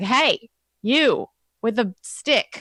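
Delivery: high, drawn-out call carrying from afar. Calling over the fence to someone with a stick, yelling from a distance. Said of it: "I want to like yell from the fence".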